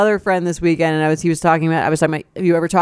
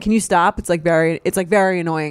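ordinary delivery

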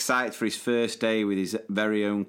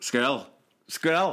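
Glaswegian accent; 3 semitones higher than usual. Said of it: "in a Glaswegian accent".

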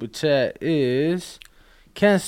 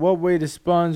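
normal talking voice

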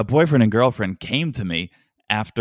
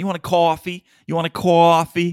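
put-on, heavy New York accent, pitched up; 7 semitones higher than usual. Watching Jasmine and Gino, quoting Stacey in her put-on New York accent. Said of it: "it's just the New York accent".

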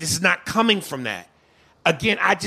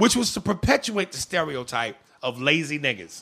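normal talking voice

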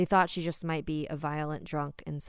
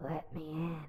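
croaking, strained banshee voice, much quieter; 7 dB quieter than usual. Narrator voices the banshee's plea, in a croaking, strained banshee voice. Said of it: "the banshee croaked, her strained voice echoing".

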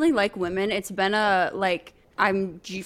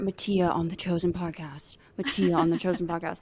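soft, hushed, repeated half-whisper; 2 semitones lower, 6 dB quieter than usual. Retelling half-whispering in someone's ear while she slept: imitating own half-whisper. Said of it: "whisper in her ear".

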